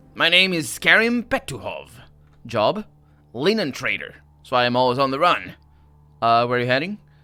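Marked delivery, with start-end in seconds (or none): 0.2-5.6 slow, grouchy, grumpy put-on character voice. Answering questions as an improvised character: grumpy character voice. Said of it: "I'll just go with that voice before".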